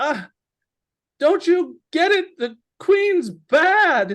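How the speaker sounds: very high, very loud, badly drawn-out cry. Game master voicing a young wounded character crying out, high-pitched cry. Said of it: "he kind of cries out in a high-pitched voice".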